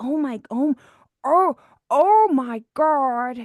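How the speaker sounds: very slow, throaty drawl, dragged out from the throat. Retelling finding the voice: Jennifer Coolidge impression. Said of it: "I found the spot in my voice".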